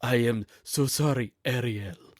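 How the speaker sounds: put-on slow Mexican accent. Imitating an actor's accented line to Ariel: imitating Javier Bardem's accent. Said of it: "he played with an accent".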